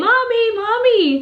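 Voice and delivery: put-on child's yell. Recounting how a daughter called out for her mother one night, acting out the child's cry, imitating a child yelling. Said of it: "I'm scared".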